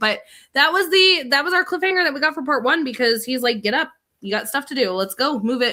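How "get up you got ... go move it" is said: full-on manly, grown man voice. Quoting a grown-up character telling John to get up: Walt's full-on man voice. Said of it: "full-on man voice".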